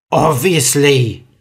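grunting. Narrator reads a cave girl answering Mia, grunted. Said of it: "grunted the girl".

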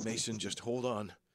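worried, concerned woman's voice. Telling a story, voicing the woman answering Mason in a concerned woman's voice. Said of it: "equally as concerned".

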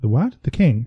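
ordinary delivery

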